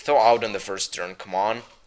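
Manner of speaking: ordinary delivery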